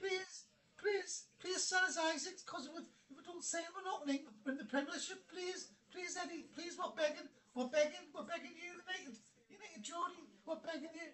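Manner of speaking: mock, very high, repeated begging, pleading voice. Mocking a rival fan by acting out their plea to sell isaac: mock begging. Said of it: "We joke, mate".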